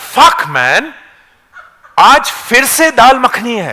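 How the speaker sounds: top-of-the-lungs shout, high, drawn-out, full voice. Retelling a man reading the menu in a public cafe; retelling a shout at full voice. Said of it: "he shouts at the top of his voice".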